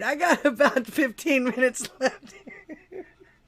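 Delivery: words breaking into laughs. Announcing the time left in the stream, laughing while talking. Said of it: "If I can stop laughing long enough".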